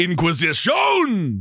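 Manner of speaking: high-pitched cartoon crab character voice. Saying a word jokingly like Sebastian the Crab from Little Mermaid. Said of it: "I'm saying it like Sebastian the Crab".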